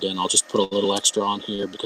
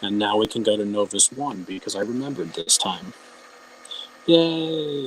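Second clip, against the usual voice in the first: normal talking voice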